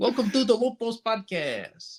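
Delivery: put-on high Eastern European accent.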